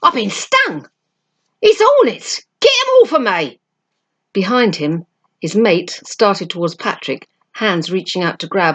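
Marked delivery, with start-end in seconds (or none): 0.0-3.6 very high, shrill, swooping, outraged howl of pain. Reading a story, a man stung across the face cries out, howling in pain and outrage. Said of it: "The skinheads froze in grotesque positions, like children playing statues. Their ugly faces were turned towards the boys, their eyes popping, their loose mouths gaping".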